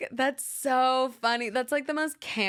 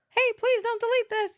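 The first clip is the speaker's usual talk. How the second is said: put-on cartoon cookie voice, higher; 12 semitones higher, 3 dB louder than usual. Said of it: "You sound like the gingerbread man".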